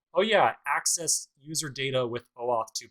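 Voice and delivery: ordinary talk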